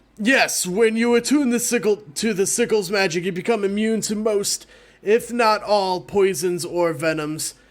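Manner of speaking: hulking minotaur voice, pitched high. A storyteller voices a minotaur who approaches the counter and speaks; minotaur voice. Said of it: "And into view you see a minotaur covered in soot and presumably sweat. / And then you hear heavy footfalls sounding out throughout the building as a tall, horned figure emerges from the doorway behind".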